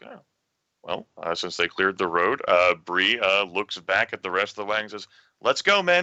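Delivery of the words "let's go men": piping, very high, commanding, authoritative voice. Voicing a character ordering the wagon crew onward: piping, authoritative voice. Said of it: "a piping, authoritative voice that perhaps should not have that much authority".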